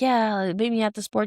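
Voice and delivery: ordinary talk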